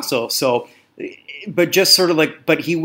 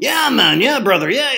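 put-on stoner voice, much higher pitch; 7 semitones higher than usual. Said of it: "he's sounding like [name] from Cheech and Chong".

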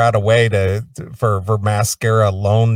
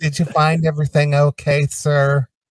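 mocking put-on affected voice, higher; 5 semitones higher than usual. Mocking the affected voice of a cashier: imitating an affected cashier voice. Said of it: "the affect on the voice".

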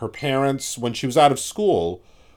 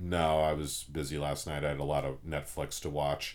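mock very low, very quiet, flat deadpan; 7 semitones lower, 12 dB quieter than usual. Retelling answering students who ask about their graded essays, retelling a deadpan reply. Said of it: "I'll sort of deadpan it and say".

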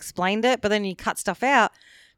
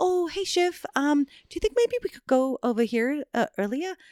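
put-on nervous voice, much higher pitch; 6 semitones higher, 4 dB quieter than usual. Imitating an English actor's nervous character talking to Chef, mock-nervous high voice. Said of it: "he's really high because he's nervous all the time".

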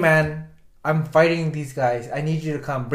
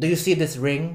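put-on thick, heavy Filipino accent. Retelling what a woman said to them, in a thick Filipino accent. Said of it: "Thick, like very Filipino accent".

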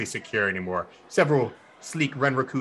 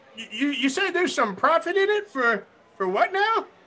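put-on granny voice, much higher. Answering the door while pretending to be a granny: granny impression. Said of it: "do my best Granny impression with my voice changing".

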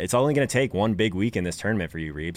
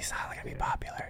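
mock whispering, quieter. Repeating another speaker's words back to him: imitating a whisper. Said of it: "You whispered that".

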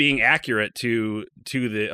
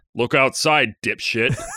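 booming, godlike voice from the heavens; 3 dB louder than usual. Acting out a voice answering from the heavens: booming voice from the heavens. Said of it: "Voice booms down from the heavens".

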